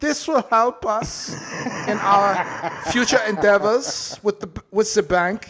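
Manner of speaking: high-pitched put-on German accent. Imitating what the Vatican officials said: put-on Nazi German accent. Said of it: "I'll just say it in Nazi German".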